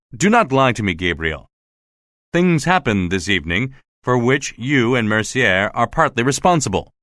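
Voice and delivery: plain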